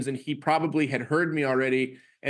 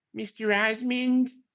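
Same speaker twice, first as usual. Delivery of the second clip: put-on timid, pitched-up voice; 7 semitones higher than usual. Retelling calling out to a teacher from far away, retelling a timid call. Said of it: "I say in a timid voice".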